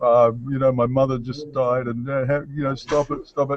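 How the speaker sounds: mock cowering, high, begging voice. Retelling being beaten on the ground, imitating own cowering plea. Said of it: "lying on the ground like, like a cowering".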